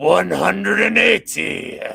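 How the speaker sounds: rough, high-pitched bellowing shout. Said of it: "he sounds like [name]".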